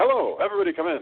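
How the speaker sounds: put-on old-time fast patter voice. Imitating an over-performed old movie line: 1930s snappy patter. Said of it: "sort of thirties sounding Snappy Patter".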